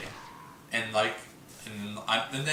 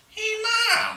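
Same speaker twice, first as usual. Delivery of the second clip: put-on teenage voice, higher and louder; 6 dB louder than usual. Retelling asking his mom for a game: imitating his fourteen-year-old voice. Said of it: "that's what I sounded like when I was fourteen".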